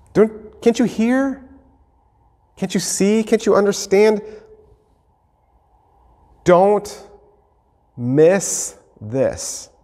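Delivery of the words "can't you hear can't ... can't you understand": high, earnest, begging pleading tone. Role-playing the boat scene, voicing Jesus pleading with them. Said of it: "and he's pleading with them".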